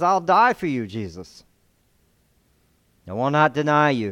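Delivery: mock-passionate, acted-out delivery. Retelling a disciple's vow to Jesus, acting out passionate speech. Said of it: "He speaks passionately".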